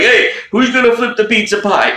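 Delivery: very high-pitched, silly, comic put-on voice. Joking about a congressional testimony, Doctor Fauci impression. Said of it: "'cause he's like".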